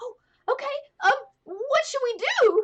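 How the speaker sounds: very high, eager and thrilled voice. A game narrator voicing Carl as he gets to come with you, Carl, so excited. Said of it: "He's so excited".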